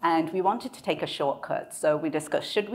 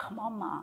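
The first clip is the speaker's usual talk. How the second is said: hushed, urgent, high, pleading half-whisper; 5 semitones higher, 10 dB quieter than usual. Retelling pulling the mother away: retelling her own half-whisper. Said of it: "I whispered to her".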